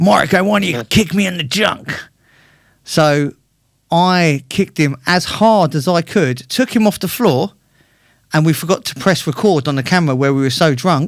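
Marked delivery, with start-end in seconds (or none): 0.0-1.9 put-on American accent. Retell what Jimmy Miller said to you while drinking heavily in your bar, in Jimmy Miller's American accent. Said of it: "in an American accent".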